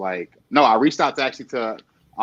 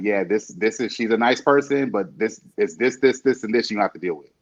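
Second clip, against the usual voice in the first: usual speaking voice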